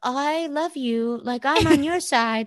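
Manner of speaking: put-on teeny little voice, high-pitched and slow. Retelling what a little girl said on the show: teeny Serena voice. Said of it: "it kinda sounds like Serena's, except teeny".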